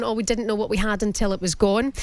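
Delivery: plain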